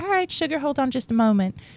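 courteous customer service tone. Showing the voice used at work when annoyed with a customer: customer service voice. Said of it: "that's my customer service voice".

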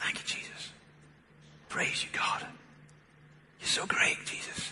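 whispering under breath. Speaker recounting the last words they heard their mum say: imitating whispering under her breath. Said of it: "under her breath, I could hear her saying".

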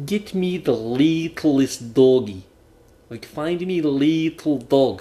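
fake Russian accent. Retelling a running joke with a friend at work, pseudo-Russian Gru accent. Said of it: "you're in this almost like a Russian Gru accent".

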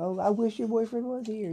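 high, loud, taunting tone.

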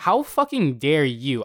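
put-on irritated outburst. Speaker retells confronting a lady who accused the speaker's dog, retelling an irritated outburst. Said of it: "I was so irritated at her".

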